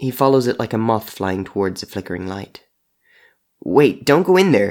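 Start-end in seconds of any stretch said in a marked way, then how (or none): 3.6-4.7 anxious, nervous, raised and high-pitched call. A man calls after a creature flying into his kitchen, calling nervously. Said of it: "he calls nervously".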